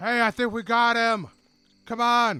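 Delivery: very high, slow cupped-hands shout. Voicing a character who cups his hands, calling guards over: yelling. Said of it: "You can hear him yell".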